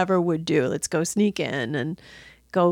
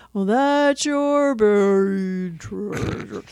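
very slow, dragged-out delivery. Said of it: "And they're like".

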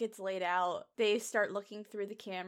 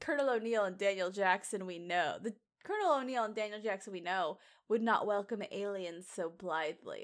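normal talking voice

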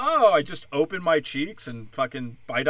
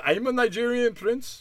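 put-on Indian accent, pitched up; 8 semitones higher than usual. Acting out a scam message, the speaker plays a nigerian prince in a put-on indian accent. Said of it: "I'm doing Indian".

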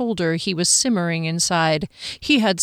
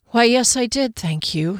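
tired, weary, worn-out and drained; 4 semitones higher than usual. Reading a story aloud, a woman answering a man's sarcastic remark: tired voice. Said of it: "she replied in a tired voice".

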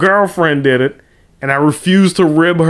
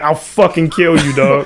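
put-on hostile, aggressive tone. Acting out an imagined cab driver threatening a passenger: imitating a hostile cab driver. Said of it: "mad hostile like that".

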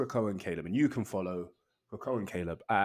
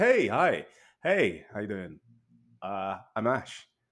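loud, very slow, drawn-out delivery; 5 dB louder than usual. Showing another speaker how they usually open the show: mock-imitating own usual intro. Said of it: "here's a crash course".

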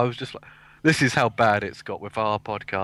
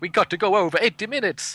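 put-on Italian accent, pitched up; 9 semitones higher than usual. Imitating the director of the film: put-on italian accent. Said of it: "It's my Italian impression".

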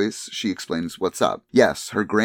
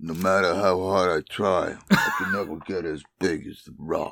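mumbly, put-on tough-guy voice; 3 semitones lower, 3 dB quieter than usual. Riffing with friends after a movie joke, a Stallone impression. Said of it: "that was a phenomenal Stallone".

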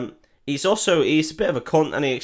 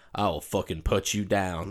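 put-on Southern cowboy voice, lower and quieter; 6 semitones lower, 7 dB quieter than usual. Retelling a film scene, quoting the villain: Jeffrey Dean Morgan Southern cowboy voice. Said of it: "he is a Southern cowboy".

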